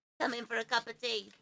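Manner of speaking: really high-pitched, full cartoon voice. Asked what the little blue worm sounds like, speaker quotes it: high cartoony Labyrinth worm voice. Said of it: "That really high pitched cartoony voice".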